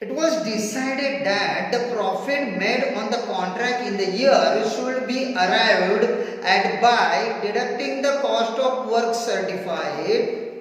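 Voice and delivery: very slow, loud dictating delivery.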